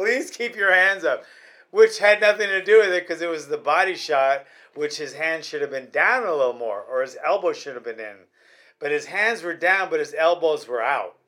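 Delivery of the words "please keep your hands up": mock pleading, higher. Retelling how a fighter's corner pleaded with him: imitating a trainer pleading. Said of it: "He's pleading with him".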